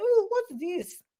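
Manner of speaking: high-pitched, slow, surprised delivery.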